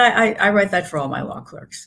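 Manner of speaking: mock completely dry, straight delivery, no wink. Recalling a judge signing a book for her law clerk, retelling a deadpan remark. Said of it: "but completely deadpan".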